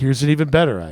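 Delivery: gently sarcastic, tongue-in-cheek, lightly mocking tone. Reading a coalition's proposals aloud, a little mocking. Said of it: "with mockingly a little bit".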